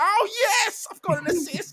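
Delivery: very high, slow, drawn-out self-congratulating tone. Imitating a player celebrating an assist by himself: imitating Dalot celebrating. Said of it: "'cause he's like".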